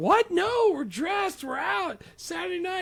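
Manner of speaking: play-acted, very high screaming shriek of disbelief. Retelling a movie scene where her date suggests going home: imitating someone screaming. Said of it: "And she's, like, screaming".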